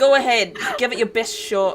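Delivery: put-on loose, approximate Cockney accent. A talking door taunting someone with a sword, Cockney-ish accent. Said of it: "something along the lines of Cockney".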